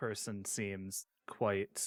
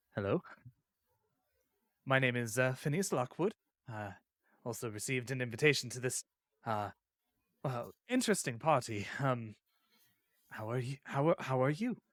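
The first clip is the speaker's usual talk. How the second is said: shy, nervous, sheepish and embarrassed; 3 semitones higher than usual. A player in a role-play greets the first guest at a party, nervous and sheepish. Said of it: "nervously and sheepishly go".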